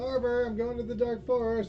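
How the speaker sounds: loud high-pitched yelling.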